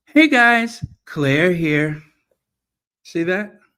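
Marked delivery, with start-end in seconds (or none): 0.2-0.9 pitch rises high on "hey guys," small drop after. Showing the inflection for an intro greeting: hey guys up, then slightly down. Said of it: "you have to take it up and then you bring it down ever so little".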